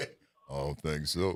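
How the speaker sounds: very deep bass voice at the lowest pitch.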